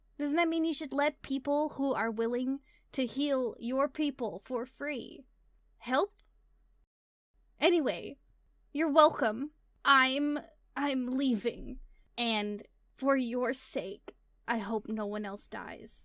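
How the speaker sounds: hoarse, raspy, rusty-sounding voice. Game narrator voicing a woman whose voice has not been used, hoarse voice. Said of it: "in like a hoarse sort of voice".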